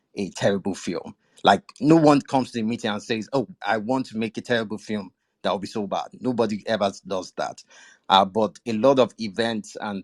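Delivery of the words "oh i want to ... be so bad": plain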